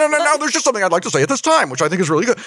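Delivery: very high, insistent, pushy voice. Imitating own way of interrupting on the show: pushy interjecting voice. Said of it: "That's what I sound like on this show".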